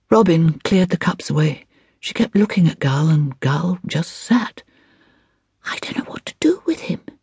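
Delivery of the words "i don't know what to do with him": whispered breathily. Robin speaks to the narrator about Gull: whispered. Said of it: "she whispered to me".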